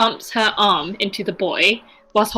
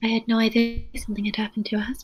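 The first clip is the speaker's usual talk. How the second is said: dropping even softer, hushed voice; 7 dB quieter than usual. Playing a character who talks quietly about a husband's fate: speaking even more softly. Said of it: "She begins to speak even more softly then".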